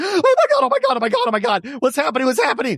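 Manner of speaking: very high, frantic, freaking-out panic. Retelling a flash flood warning, the speaker acts out a man freaking out: imitating someone freaking out. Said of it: "He starts freaking out".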